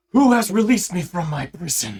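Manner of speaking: feminine-sounding voice. Narrator voicing a newly freed voice speaking to the players, in a somewhat feminine voice. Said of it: "a somewhat feminine voice".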